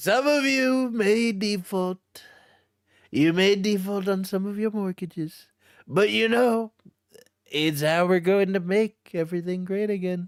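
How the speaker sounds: politician's speech voice, pitched very high. Repeating a joke about defaulting on mortgages, imitating the us president. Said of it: "let me say it like, uh, the President of the United States".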